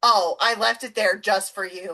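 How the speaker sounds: ordinary delivery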